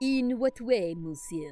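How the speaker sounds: put-on over-the-top poor French accent. Playing a character at a seance event, in a bad French accent. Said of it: "bad French accent incoming".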